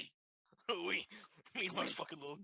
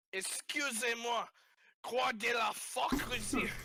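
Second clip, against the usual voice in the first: acted high, loud, drawn-out shout; 8 semitones higher, 6 dB louder than usual. A player's character shouts at a man they have just spotted: shouting at a man. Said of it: "So I'm gonna shout at him".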